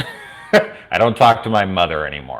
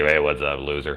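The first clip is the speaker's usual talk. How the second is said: over-the-top offhand, dismissive, blasé tone; 3 semitones lower, 4 dB quieter than usual. Showing how the earlier greeting sounded: exaggerated blasé greeting. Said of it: "that sounded so blasé, like".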